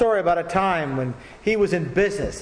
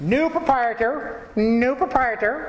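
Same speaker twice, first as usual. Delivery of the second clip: high, slow squawking parrot voice; 7 semitones higher than usual. Telling a joke, the parrot speaks as the minister appears: squawking parrot voice. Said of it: "he squawked".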